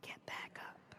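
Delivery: very quiet, breathy whisper. Speaker demonstrating three volume levels, starting at a whisper.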